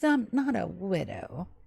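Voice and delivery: soft, giggly voice, speaking through giggles. Retelling how a woman answers a man's remark, giggling while talking. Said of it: "She giggles".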